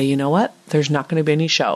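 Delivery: ordinary delivery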